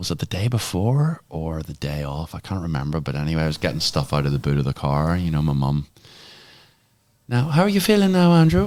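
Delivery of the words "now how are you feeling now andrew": put-on Irish Galway accent, higher and louder. Retelling his mum's words before a race: imitating his mum's Galway accent. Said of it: "This is my best Galway accent".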